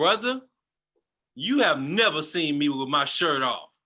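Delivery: acted very firm, upset voice. Retelling what the minister said after a silence: imitating a very firm, upset tone. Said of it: "spoke in a very firm tone, like he was upset".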